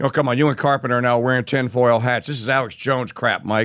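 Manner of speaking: mocking heckle, low and dismissive.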